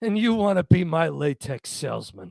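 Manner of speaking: unimpressed, withering, dripping, scornful disdain. Retelling a classic scene, quoting one character's remark to another, with mock disdain. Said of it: "It's just the disdain".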